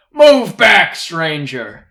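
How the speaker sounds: very loud, high, shouted soldier's yell. Game narrator voices a soldier warning a stranger away from a prisoner: yelling soldier. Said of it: "yells this out to him".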